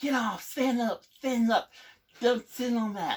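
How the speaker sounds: very high, loud shrieked screaming. Retelling a commander screaming to get off the rack: imitating someone screaming. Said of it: "he started screaming at me, like".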